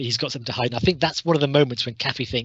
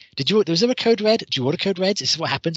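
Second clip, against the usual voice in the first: acted, overbearing, way over-the-top tone, pitched up; 6 semitones higher, 3 dB louder than usual. Recounting a woman interrogating Jessup over lunch, mock over-the-top interrogating. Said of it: "going way over the top in interrogating Jessup".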